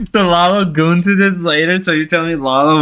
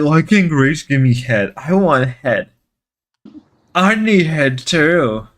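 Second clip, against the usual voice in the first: aggrieved, unhappy, mad put-out griping; 4 semitones lower than usual. Imitating Lalo complaining about not getting head: imitating unhappy Lalo. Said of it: "Lalo's so unhappy".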